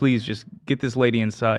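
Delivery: ordinary talk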